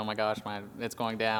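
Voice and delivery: ordinary talk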